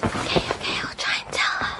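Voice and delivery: soft whispered aside under the breath. Talking in bed to a boy only she can see: whispering. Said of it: "What are you whispering about?".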